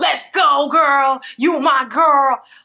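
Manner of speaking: pumped hype-man talk. Asking why Kendall always talks like a hype man, imitating Kendall's hype-man talk. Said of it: "he always sounds like a hype man".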